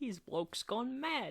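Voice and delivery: very high, awful fake British accent. Riffing on a list of phrases, in a terrible British accent. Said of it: "That was a terrible accent".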